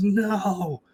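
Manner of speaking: screaming spirit voice. Voicing a ghost hit by a proton beam: ghost screaming. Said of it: "as she screams".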